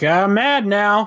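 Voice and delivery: slow mock detached voice. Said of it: "he just was like".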